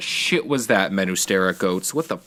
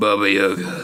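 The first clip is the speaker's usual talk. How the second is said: acted gravelly low voice. Trying the line again after it was called not good: deep raspy Oliver Queen voice. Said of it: "in his really deep, raspy Oliver Queen voice".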